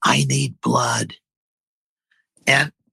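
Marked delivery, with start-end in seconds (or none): 0.0-1.1 put-on hushed, quiet voice. Retelling what she said, leaning in close away from the camera: imitating someone speaking quietly. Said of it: "She says real quietly".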